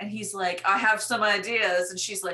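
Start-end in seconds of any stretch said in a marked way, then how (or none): 0.6-1.9 loud, booming, belted-out character voice. Retelling an Austin Powers scene, doing his reply: impersonating Austin Powers. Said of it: "That was really good impersonations".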